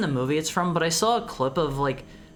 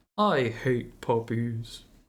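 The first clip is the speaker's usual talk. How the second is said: very low, lazy cartoon cat voice; 7 semitones lower than usual. Doing a bit after a vet's line, answering in a Garfield voice. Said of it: "That's my that's my Garfield voice".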